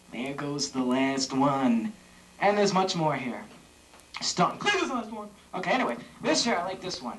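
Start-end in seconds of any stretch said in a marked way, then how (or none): 0.1-1.9 sly drawl, pitched very low. Trying the same line in different manners on a show, say it as a Jack Nicholson impression. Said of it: "Jack Nicholsonly".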